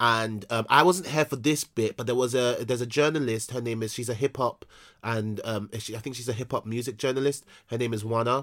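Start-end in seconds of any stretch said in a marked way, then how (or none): 7.7-8.4 American-accented speech. Naming a hip hop music journalist: American accent. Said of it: "why did I say that in American accent?".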